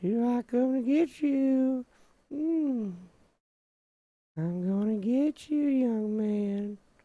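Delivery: put-on very high, creepy old-man voice. Commenting on a game's villain, the speaker puts on a Herbert voice. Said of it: "it'd be funny if he used like a Herbert voice".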